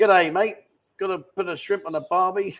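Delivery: terrible, bad put-on Australian accent. Trying out different accents one after another, terrible Australian accent. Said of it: "That's a terrible Australian accent".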